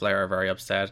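ordinary talk

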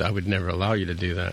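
ordinary talk, nothing marked

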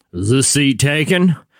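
full, big, low baritone voice. Imitating a stranger who spoke from behind the speaker at brunch, in a big baritone voice. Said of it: "this big baritone voice behind me go like this".

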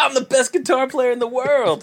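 put-on tipsy, drunken bragging voice, very high. Retelling a movie's drunken best man speech: imitating drunk Steve Buscemi. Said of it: "when he gives the drunken best man speech".

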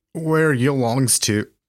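bad put-on Newfoundland accent. Speaker tries a question on her in a poor attempt at Newfie slang. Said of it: "my poor attempt at New Finney slang".

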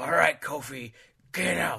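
loud, slow, drawn-out gravelly voice. Predicting a WrestleMania moment, the speaker does a Vince McMahon impression. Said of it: "all you got to do is be really gravelly".

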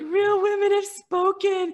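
very high, tearful, drawn-out sobbing speech. Speaker recalling her husband rushing in as the sold-out sign came up, acting out sobbing. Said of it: "I'm like sobbing".

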